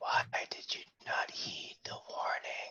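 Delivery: very quiet, faint, hushed, breathy whisper. A game master voices a hidden figure calling out in the dark: whisper. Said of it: "you hear a voice that calls out to you in a whisper".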